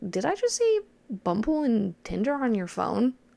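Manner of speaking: put-on casual, offhand, swooping playing-it-off tone. Retelling seeing dating apps on his phone and asking him, retelling playing it off. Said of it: "kind of trying to play it off".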